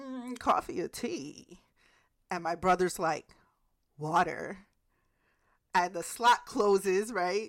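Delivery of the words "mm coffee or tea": high, slow, old-fashioned put-on voice. Retelling their brother's secret knock, as the voice behind the door slot answers, in an old-timey voice. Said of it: "this old timey voice is like".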